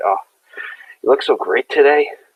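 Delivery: melting, smitten, lovestruck tone. Acting out a scene where Astrid smiles at Edward, who answers her: melting, smitten. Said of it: "And I melt".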